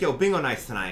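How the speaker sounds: ordinary talk, nothing marked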